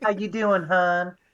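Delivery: super high squeaky lisping voice. Retelling how a guy at work greeted the speaker, in a super high-pitched squeaky lisp. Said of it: "super high pitched and very squeaky and lispy".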